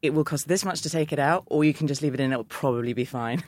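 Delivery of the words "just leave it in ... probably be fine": ordinary talk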